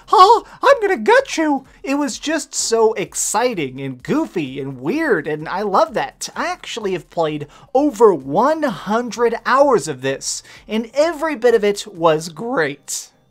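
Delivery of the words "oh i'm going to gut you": high, raised, squeaky, silly cartoon voice. Playing as Jason in a game, smashing down cabin doors to kill people, in a silly Mickey Mouse voice. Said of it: "be like Mickey Mouse".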